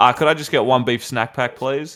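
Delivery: put-on, self-assured, confident, casual tone. Retelling ordering food at a kebab shop: imitating a confident order. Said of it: "I walk up so confident".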